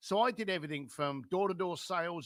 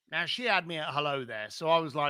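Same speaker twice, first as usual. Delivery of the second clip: ordinary delivery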